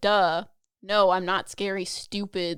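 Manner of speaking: put-on mean, judging, offended voice. Retelling a voice heard in the head: imitating a mean, offended voice. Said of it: "Its tone was like".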